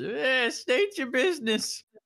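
put-on old crone voice. Voicing a crone with a hooded lantern answering the door: crone voice. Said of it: "she says".

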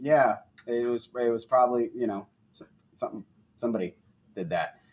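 low, quiet, vague, noncommittal mumble.

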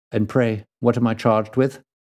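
ordinary delivery

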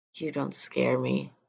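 muttered under breath. The narrator answers a man who told him to stay in the room: under my breath. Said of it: "mostly under my breath".

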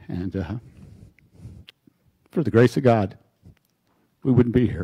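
getting emotional, choked voice. A speaker explains why they are here on this journey, choked up. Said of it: "But a little choked up".

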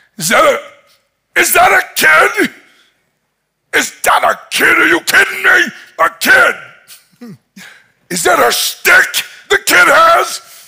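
play-acted very high, loud, offended, incredulous ranting. Retelling how Goliath reacted to a kid sent with a stick: acting out outraged Goliath. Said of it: "Goliath was outraged".

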